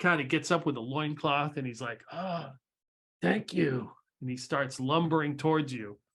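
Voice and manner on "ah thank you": lizard man creature character voice. Voicing a lizardfolk man getting up from a squat: lizardfolk man voice. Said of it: "It is a lizard folkman dude".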